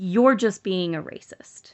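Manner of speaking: mock confrontational, hostile, aggressive, accusing tone. Retelling what a man said to the speaker and their sister, mock-aggressive retort. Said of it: "he got very like very aggressive".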